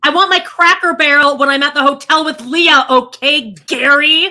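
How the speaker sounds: loud, belted-out reality-show voice. Doing an impression of Amber from Teen Mom on request: Teen Mom Amber impression. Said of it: "a quick Teen Mom Amber impression".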